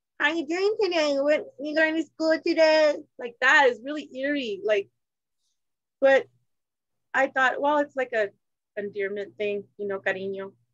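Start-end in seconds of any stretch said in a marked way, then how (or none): 0.2-3.0 put-on high-pitched baby-talk voice. Showing how she talks to her kids or cats, in a baby voice. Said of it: "I have that baby voice".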